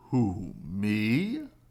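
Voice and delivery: deep, low dragon voice with "me" drawn out. Reading a story aloud, the dragon answers Owl in a deep voice. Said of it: "said a deep voice".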